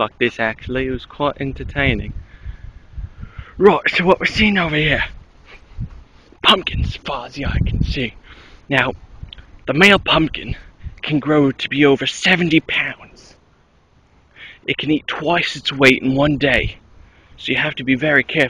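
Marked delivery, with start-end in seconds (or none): 3.6-18.5 fake Australian accent drifting into British. Describing pumpkins in a game world: put-on Australian accent, more English. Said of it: "it's more English than Australian".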